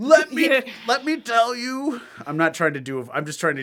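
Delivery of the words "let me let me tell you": very slow, very high, loud, drawn-out drawl. Describing a curmudgeonly character while doing a Bill Cosby voice. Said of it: "You're always already doing Bill Cosby".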